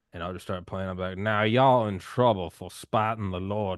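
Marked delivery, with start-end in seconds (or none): 1.2-3.8 very loud, slow put-on Southern Georgia drawl. Describing how he plays games with others, in a put-on Southern accent. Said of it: "I'll put on like a Southern accent, like a Southern Georgia professor".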